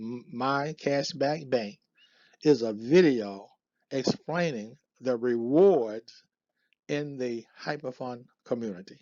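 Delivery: very slow, deliberate, spelled out word by word. Presenter repeating a video description for viewers: said really slow. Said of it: "I'm gonna say that real slow".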